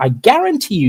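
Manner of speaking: stress on "guarantee".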